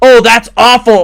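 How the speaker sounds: booming, very loud, high-pitched exclamation. Retelling what someone said while trying the jellyfish: imitating a loud exclamation. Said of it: "loud as H E double hockey sticks".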